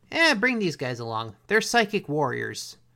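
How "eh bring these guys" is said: plain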